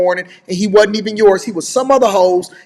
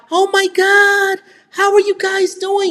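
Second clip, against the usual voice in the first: put-on sugary sweet voice, very high, slow; 11 semitones higher than usual. Scolding someone, mimic how they greeted his family, in a put-on high voice. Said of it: "your voice was all high".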